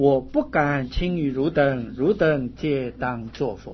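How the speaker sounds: normal talking voice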